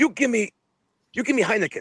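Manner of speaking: very high-pitched, insistent delivery. Retelling the Sheik demanding a beer: Iron Sheik impression. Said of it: "Sheik's like".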